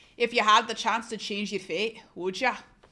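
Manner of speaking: Scottish accent, attempted. Asked to try Scottish, the speaker gives it a go: attempted Scottish accent. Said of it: "I want to hear you try Scottish".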